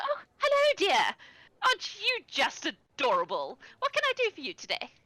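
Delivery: put-on sweet little old lady voice, very high, sing-song. A narrator voices a bakery stall owner greeting a customer, sweet little old lady voice. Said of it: "She is the sweet little old lady".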